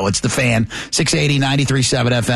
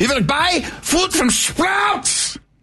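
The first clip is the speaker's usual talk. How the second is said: fake German accent, very high-pitched. Retelling talking to no one while driving past a sprouts, german accent. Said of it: "I started saying this in a German accent".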